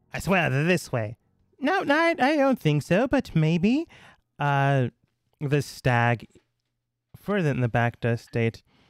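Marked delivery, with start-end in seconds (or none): 0.1-3.8 squeaky tiny voices, much higher and slower. A narrator voices little creatures approaching the listeners along the path, squeaky little voices. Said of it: "squeaky little voices coming towards you just saying".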